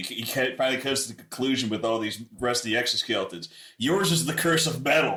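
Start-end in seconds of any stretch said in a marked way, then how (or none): 3.8-5.2 acted, dramatic, loud, high outcry. Voicing a character pointing at another player: crying out in character. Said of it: "My character cries out and points at you".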